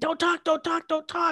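very high, urgent, insistent repeated yell. Retelling doctors and nurses in a hospital room: imitating doctors and nurses yelling. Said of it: "the doctors and nurses are all yelling".

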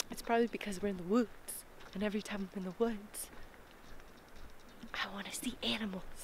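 hushed whisper. Speaker has just reached the forest, whispering. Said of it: "I feel like I have to whisper".

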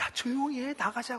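soft, hushed voice.

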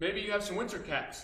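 ordinary delivery, nothing marked

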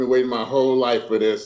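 ordinary delivery

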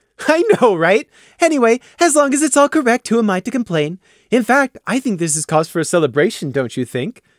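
happy, smiling voice. Narrator reads a woman asking her group, happy and smiling. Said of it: "she asked their group with a happy smile".

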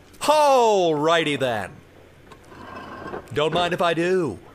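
bad put-on Italian accent, comic-actor impression. Practicing voices and accents on your own, do an Italian Jim Carrey impersonation. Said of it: "That was my Italian Jim Carrey impersonation".

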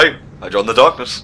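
animated bear character voice. Telling an improvised story where Obama reveals he joined the darkness, Yogi Bear voice. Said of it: "I don't know why I gave him that voice".

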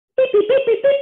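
very high, loud, microwave-like beeping sound.

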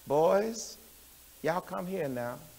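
calm, soft unraised voice. Retelling how grandfather called the fighting boys: imitating grandfather's calm unraised voice. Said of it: "I never seen my grandfather raise his voice ever".

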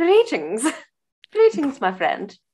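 upper-crust posh delivery. Redoing a greeting after being asked for more posh, posher voice. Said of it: "Can you do it with a bit more posh?".

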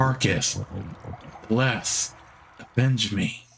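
faint, drawn-out whisper, very slow. Voicing a dying character who leans in to speak: dying whisper. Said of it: "She starts to whisper".

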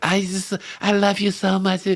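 put-on girl's voice. Retelling what a girl in the crowd said: imitating a girl's voice. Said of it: "her voice is like".

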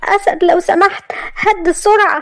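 frightened, fearful, very high-pitched voice. Maria, beside Asad as he drives at crazy speed; fearful. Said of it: "وقالت لي بخوف".

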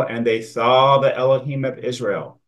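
emphasis placed on the word SAW. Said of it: "I'm emphasizing the word".

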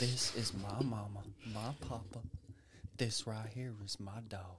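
put-on very quiet, sweet, creepy, soft Southern accent. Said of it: "Why do we always say it's southern?".

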